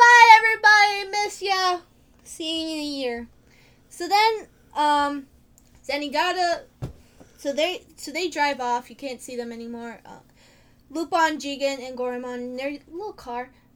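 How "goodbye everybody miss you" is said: very loud cheerful shout, high pitch, happy. Retelling a movie scene, imitating Kiki yelling happily. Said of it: "she's kinda just yelling happily".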